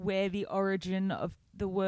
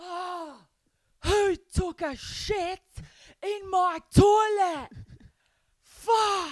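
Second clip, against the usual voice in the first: shrill, very high, very loud, drawn-out scream; 12 semitones higher, 9 dB louder than usual. Retelling what a man in the street screamed: imitating a man screaming. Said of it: "screams in the street".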